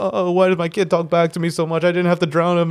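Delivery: mock, put-on crying. Retelling a story, quoting a mother at the river: imitating someone crying. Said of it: "She's crying. She's all like".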